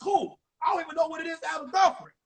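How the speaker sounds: eager, blurted delivery. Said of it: "I was like".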